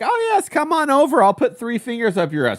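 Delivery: very high, lilting, swooping woman's voice. Retelling how Scarlett acted toward him: imitating Scarlett. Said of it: "She was like".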